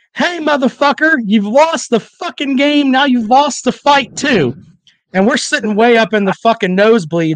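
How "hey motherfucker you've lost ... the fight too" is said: pitched-up, jeering delivery. Retelling how a friend yelled at a rival fan: imitating Danny yelling. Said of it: "Danny yells at him".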